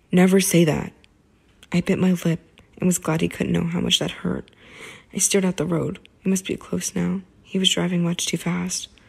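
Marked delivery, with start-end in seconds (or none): 0.1-0.9 low and harsh voice. Reading a novel aloud, a character snaps a warning: low and harsh. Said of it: "His voice whipped out low and harsh".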